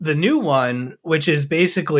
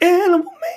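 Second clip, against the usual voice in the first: very high voice breaking and cracking; 14 semitones higher than usual. Repeating the words of a first catchphrase, voice cracking. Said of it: "my voice just cracked".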